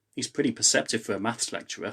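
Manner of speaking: plain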